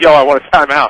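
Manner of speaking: plain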